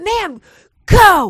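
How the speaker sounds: high-pitched yelling. Retelling a man in traffic screaming at her, acting out his scream. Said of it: "he starts screaming at me".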